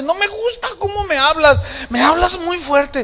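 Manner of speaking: tearful, whiny complaining tone.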